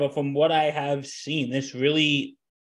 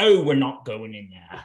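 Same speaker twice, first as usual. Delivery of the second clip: put-on British accent; 4 semitones lower than usual. Retelling what a man says on screen, in a british monotone. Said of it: "It's that British monotone".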